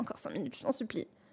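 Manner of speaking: groggy pleading voice.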